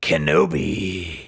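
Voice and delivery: low, dropped character voice. Speaker showing how a line could be done: General Grievous impression. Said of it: "So that's basically Matthew Wood's Grievous".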